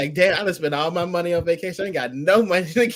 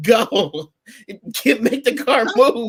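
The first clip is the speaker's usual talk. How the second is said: slow, drawn-out screaming; 4 semitones higher, 3 dB louder than usual. Retelling how a man screamed at another guy to make the car move, retelling a scream. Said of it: "he was screaming at the guy like".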